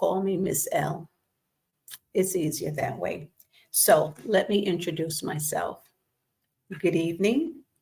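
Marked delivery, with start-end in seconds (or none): none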